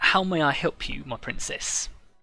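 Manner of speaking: wobbling voice of a fat satyr. Voicing a fat satyr bowing to the lady: fat satyr character voice. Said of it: "a very fat satyr wo-, wobbles in".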